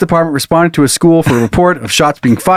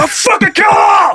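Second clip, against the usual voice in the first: put-on shrill, very high screaming. Acting out an imagined gunman holding a family hostage: screaming out the window. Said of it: "he's screaming out the window".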